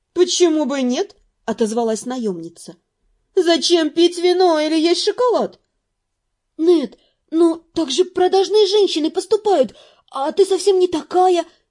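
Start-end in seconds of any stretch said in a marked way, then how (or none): 6.5-11.4 pleading, imploring, with higher pitch. The narrator pleads with the mercenary woman: pleading. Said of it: "взмолилась я".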